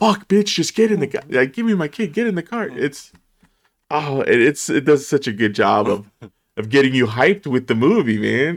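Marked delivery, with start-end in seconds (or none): 0.0-2.7 put-on frustrated yell, much higher pitch. Describing a movie scene, the speaker acts out a man yelling at a woman, retelling a frustrated yell. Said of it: "He's like yelling at her".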